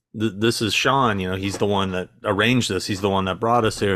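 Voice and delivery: ordinary talk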